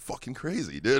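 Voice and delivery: quiet muttering under the breath. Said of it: "I'm literally muttering underneath my breath going".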